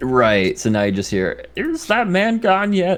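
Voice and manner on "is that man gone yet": very high, croaky frog voice. Game master voices an unseen person inside the room, Kermit voice. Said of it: "I sounded like Kermit all of a sudden".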